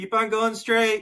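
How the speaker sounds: very high, loud yell projected across distance. Explaining how learners find their way, picturing calling across a cornfield, yelling. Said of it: "I'm like yelling at you on the".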